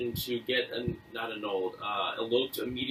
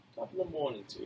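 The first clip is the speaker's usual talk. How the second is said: put-on British accent; 5 dB louder than usual. Trading accents with friends, right after an Arnie accent: stereotypical British accent attempt. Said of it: "How's the British go?".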